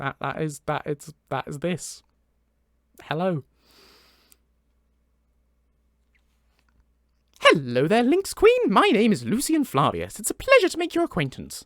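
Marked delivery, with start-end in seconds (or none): 3.0-11.6 loud, swooping, polite, courteous put-on voice. Voicing the character greeting the Lynx Queen, in Lucian Flavius character voice. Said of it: "Because I I do the voice".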